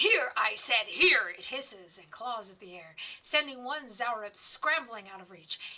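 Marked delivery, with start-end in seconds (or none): 0.0-1.3 very loud, booming, drawn-out growling beast voice. Narrating a story, voicing the drake's command in a growling drake voice. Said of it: "The drake lets out a loud growl".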